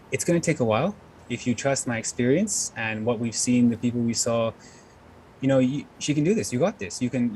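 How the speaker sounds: ordinary talk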